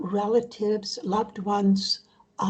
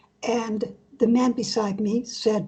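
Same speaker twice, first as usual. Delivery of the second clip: ordinary talk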